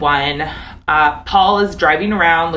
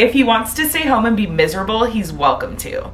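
sassy, slightly raised delivery. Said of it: "I love your sassy voice".

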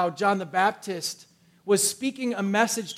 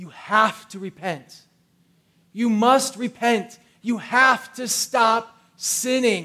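put-on yelling at full volume, slow; 4 dB louder than usual. Retelling a man in a river calling a crowd to repent: imitating someone yelling. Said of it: "yelling at the top of his voice".

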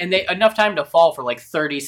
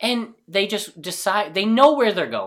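ordinary talk, nothing marked

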